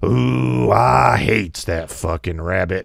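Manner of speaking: low, deep, rasping, gravelly, drawn-out cartoon growl. Retelling a comic's bit about cartoon profanity: Yosemite Sam voice. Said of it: "him doing Yosemite Sam and going".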